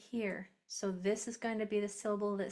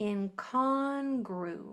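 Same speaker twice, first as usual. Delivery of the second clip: gru syllable emphasized; 4 dB louder than usual. Speaker sounding out a word syllable by syllable, stress on GRU. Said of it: "so I'm going to say this one stronger".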